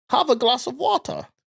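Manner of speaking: very high German accent with rasta tinge. Retelling a trip to Hamburg, in a Rastafarian-sounding German accent. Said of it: "What was that Rastafarian German doing?".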